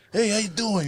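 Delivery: put-on high-pitched Italian accent. Retelling meeting Danny DeVito in the studio: Danny DeVito Italian accent. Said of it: "he had the Italian accent".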